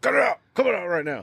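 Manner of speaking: put-on old-dad scolding tone. Retelling losing it at a screaming girl in her car seat, old dad voice. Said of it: "old dad".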